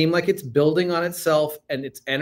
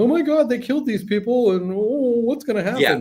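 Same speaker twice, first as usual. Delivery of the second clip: mock weepy sobbing, pitched-up tearful voice; 8 semitones higher than usual. Imitating people crying at the end of a film: mock crying. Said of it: "crying, going".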